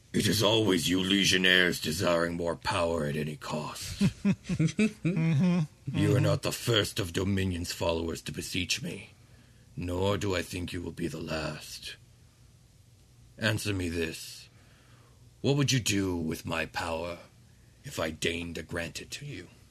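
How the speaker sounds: throaty put-on character voice. Narrating a scene, the speaker voices Ramazol addressing Dominion's followers in a throaty voice. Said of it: "This voice is all in my throat".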